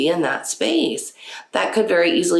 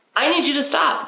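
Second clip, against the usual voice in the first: very high-pitched, firm and authoritative; 10 semitones higher than usual. Coaching how to tell someone to stop, firm, with authority. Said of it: "you got to say it with some authority".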